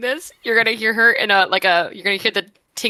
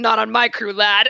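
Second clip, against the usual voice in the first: rough, gruff, stern seafarer's voice. Voicing a warning in response to a look: gruff sailor's warning. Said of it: "you'd hear in a gruff sailor's warning".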